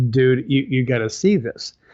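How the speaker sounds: ordinary delivery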